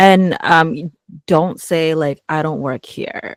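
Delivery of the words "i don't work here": condescending, talking-down tone, quieter. Showing how not to answer someone asking to return an item: condescending. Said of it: "it sounds like very kind of condescending when you say it that way".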